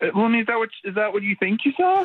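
rising pitch. Answering an accusation about putting a pill in a drink, voice getting higher. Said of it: "Why is your voice getting higher there".

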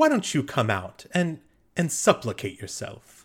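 happy, jaunty demon voice with sing-song swoops. A demon pointing at and addressing a player character, in a happy jaunty demon voice. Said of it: "in a sort of happy, jaunty kind of sounding tone for a demon".

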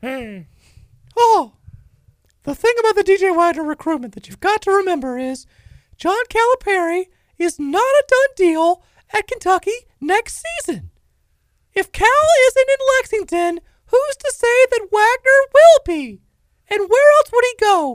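squeaky, high, loud voice. Prompted by another speaker to deliver it in a Mickey Mouse voice. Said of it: "Do it in a Mickey Mouse voice".

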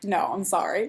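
plain

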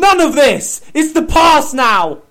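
very loud high-pitched shouting. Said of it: "We said, we said".

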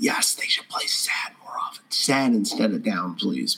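soft, close, whispered voice.

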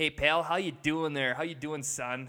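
condescending, patronizing voice, talking down. Acting out a wife's dad greeting her husband: mock condescending father-in-law. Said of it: "her dad just looks down on him".

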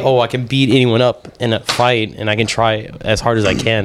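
ordinary talk, nothing marked

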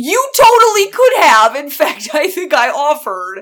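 a little real anger showing. A co-host reacting to the other's trip without them, a little real anger. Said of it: "a little bit of real anger in your voice".

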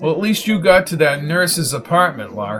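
plain reading voice

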